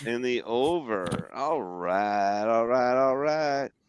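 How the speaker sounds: bad put-on Texan drawl. Doing a horrible Matthew McConaughey impression after repeating a bet. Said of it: "My horrible Matthew McConaughey impression".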